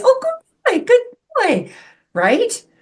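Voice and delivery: very high, bright, sing-song happy voice. Speaker demonstrating how to praise a dog, in a high happy voice. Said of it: "it's a high, happy voice".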